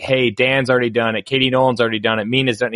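usual speaking voice

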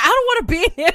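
yelling. Imagining what a phone says when taken to the bathroom: imitating a yelling phone. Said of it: "he's yelling".

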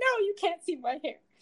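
play-acted frantic, flustered, high, panicked voice. Retelling how a character reacts to a girl grabbing his hat: imitating a panicked protest. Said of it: "he's just, like, panic".

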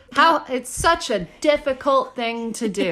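heavy, dripping, laid-on-thick sarcasm. Commenting on people refusing to wear masks while shopping: very sarcastic. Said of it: "I'm being very sarcastic".

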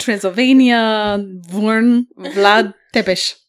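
very slow, loud, laid-on put-on Romanian accent. Retelling where a historical figure was born: put-on romanian accent. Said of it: "I got too into the Romanian accent".

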